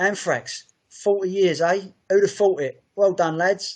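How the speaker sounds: put-on cheery Cockney accent. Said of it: "in his typical Cockney accent".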